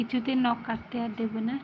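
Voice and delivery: normal talking voice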